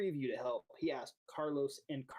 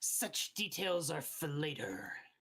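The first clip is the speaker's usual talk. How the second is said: hissed, serpentine, reptilian voice. Narrating a game, the speaker voices the Dragonborn's reply, hissing. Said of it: "The Dragonborn hisses at you and says".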